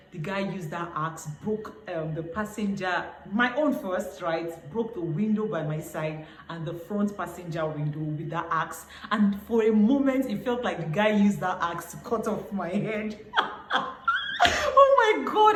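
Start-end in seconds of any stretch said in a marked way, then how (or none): 14.5-15.6 speaking through laughter. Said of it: "I'm laughing now".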